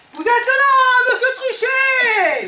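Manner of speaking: loud yelling. Greeting a boss who has just returned: shouting. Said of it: "pourquoi vous criez ?".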